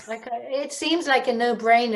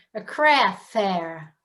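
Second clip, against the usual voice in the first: plain American pronunciation; 3 semitones lower than usual. Misheard by the others, the speaker repeats the words in an American accent. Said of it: "I'll just speak in an American accent".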